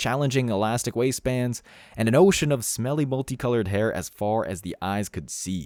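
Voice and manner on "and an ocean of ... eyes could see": plain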